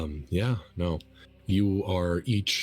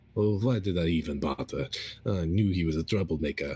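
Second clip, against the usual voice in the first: mumbling quietly to oneself. Voicing an older goblin who tips a bucket in the cell: mumbling to himself. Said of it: "mumbling to himself".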